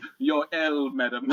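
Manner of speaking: formal house butler voice. Imagining a butler serving something on a plate: butler voice. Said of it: "a butler walking up to Sophie with, like, a plate, and he's like".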